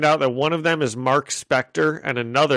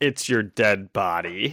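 put-on menacing voice, lower, slower; 4 semitones lower than usual. Retelling a comic-book scene, speaker performs Elektra's line: mock-menacing Elektra voice. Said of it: "performing Elektra's menacing comic-book line".

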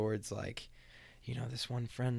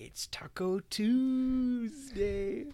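goofy, very high, loud voice, "Tuesday" stretched; 12 semitones higher, 5 dB louder than usual. Imitating his video of his family on Tuesday, in a really weird voice. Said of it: "in like a really weird voice".

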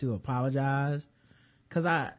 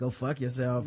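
plain

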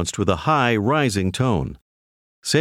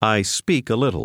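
normal talking voice

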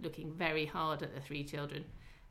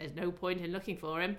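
usual speaking voice

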